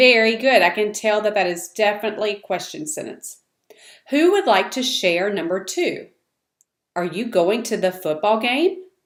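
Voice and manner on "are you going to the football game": voice rising in pitch at the end. A student reading a yes-or-no question aloud in class, rising at the end. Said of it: "I could hear the change in your voice at the end".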